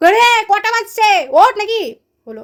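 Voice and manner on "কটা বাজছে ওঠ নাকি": slightly raised, higher-pitched voice. Retelling the second wake-up call, in a slightly raised, higher voice. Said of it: "second বার হয় একটু হাই ভয়েসে".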